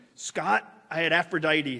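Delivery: put-on big, resonant, booming deep baritone. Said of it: "he boomed through the phone".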